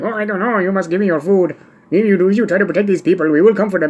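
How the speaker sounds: put-on fast, high-pitched movie-bandit Mexican accent, rattled off. Showing how a bandit in The Magnificent Seven talks, use the Eli Wallach fake Mexican bandit accent. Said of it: "like the guy in The Magnificent Seven".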